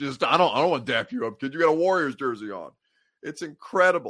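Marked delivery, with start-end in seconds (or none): 0.2-2.7 emotionless, dead-straight delivery. Retelling a player staring down a kid in a rival jersey: imitating Ja Morant, deadpan. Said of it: "he just deadpan".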